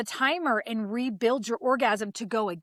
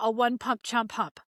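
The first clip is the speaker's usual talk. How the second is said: rattled off quickly, rapid-fire. Giving sex advice to men, saying a joke phrase really fast. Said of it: "I said that real fast".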